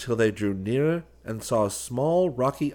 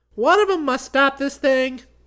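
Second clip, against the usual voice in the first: chipper, cheerful, very high-pitched voice; 7 dB louder than usual. Chick pushes another button and declares to John, cheerful. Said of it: "declared Chick cheerfully".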